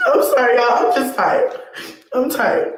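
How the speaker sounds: crying through the words. Saying there's no reason and that she's tired: crying while talking. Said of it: "sit here crying, talking about you tired".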